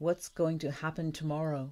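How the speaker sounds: plain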